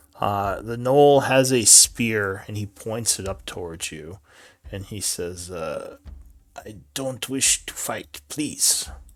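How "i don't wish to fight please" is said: creature voice speaking broken Common, halting words. Voicing a gnoll who points a spear and asks not to fight: speaking broken Common. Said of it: "broken common".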